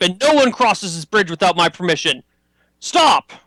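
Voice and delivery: high, barking commander's voice. A game master voicing a commander at a player, barking. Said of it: "he barks at you".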